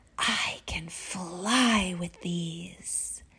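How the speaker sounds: very slow hushed secretive whisper, "fly" stretched out. The narrator tells the trolls something, whispering as if it were a big secret. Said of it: "I whispered as if it were a big secret".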